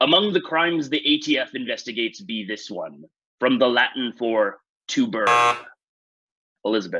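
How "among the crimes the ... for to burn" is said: talking like a pirate. A quiz host reads a Talk Like a Pirate question to players, in a pirate voice. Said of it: "I'm gonna have to do a pirate voice".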